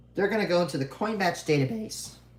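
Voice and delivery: voice cracks partway through the sentence. Explaining what happens when a search stops, voice cracking mid-sentence. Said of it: "That was a bad voice crack".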